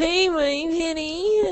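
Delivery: whining voice, pitched very high. Mock the idea of Hayden Christensen playing Bond, with a whining Hayden Christensen impression. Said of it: "whining like a freaking pansy".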